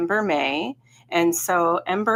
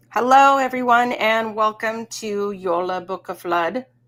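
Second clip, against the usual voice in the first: Norwegian-accented pronunciation of the words; 3 semitones higher than usual. Welcoming listeners at the start of an episode, in a norwegian accent. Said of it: "with more of a Norwegian accent".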